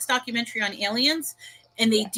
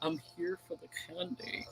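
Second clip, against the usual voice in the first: creepy, hushed, whispered stranger voice; 5 semitones lower, 16 dB quieter than usual. Imagining a creepy guy knocking on someone's door, in creepy weird guy voice. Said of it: "like a creepy, weird guy knocking".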